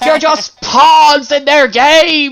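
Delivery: put-on yell. Retelling how a driver leaned out his window at protesters: imitating a shout. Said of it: "leaned out and shouted at us".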